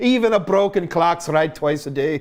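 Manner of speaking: put-on Scottish accent. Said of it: "doing the Scottish accent for Zach".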